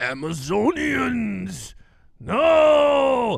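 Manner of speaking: lamenting cartoon villain voice, long stretched-out no. Mocking the movie villain Steppenwolf as a Scooby-Doo villain. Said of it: "he was like the Scooby-Doo villain".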